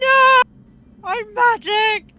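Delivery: very high, loud, panic-stricken shout. In a tabletop game, a character told he is glowing runs off, panic-stricken shout. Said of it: "panic stricken".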